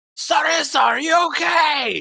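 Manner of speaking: very loud, high-pitched booming shout. A player's character amplifies his voice by magic to call to a companion, booming shout. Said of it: "use thaumaturgy to make his voice boom louder".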